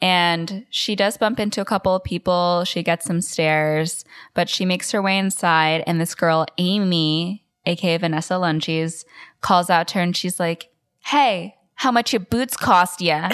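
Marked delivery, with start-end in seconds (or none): 11.0-13.3 put-on little Brooklyn accent, lightly applied. Retelling a girl calling out to her as she walks inside; little brooklyn accent. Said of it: "she has this little like Brooklyn accent".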